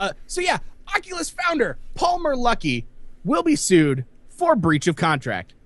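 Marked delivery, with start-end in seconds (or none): 0.0-2.8 high, really happy voice. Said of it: "You sound really happy about this".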